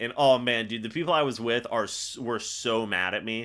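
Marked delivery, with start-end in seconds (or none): none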